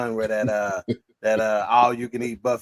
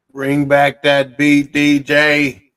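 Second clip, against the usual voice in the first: robotic voice, higher and louder; 4 semitones higher, 9 dB louder than usual. Asking the dj to bring back the beat: robot voice. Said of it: "in my robot voice".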